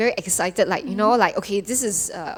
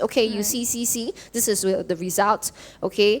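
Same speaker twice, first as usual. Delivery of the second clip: usual speaking voice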